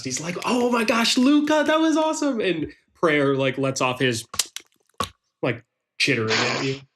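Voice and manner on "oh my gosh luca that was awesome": very high, delighted and impressed tone. Voicing a character who smiles and claps for a player: delighted, smiling. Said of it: "smiles and claps".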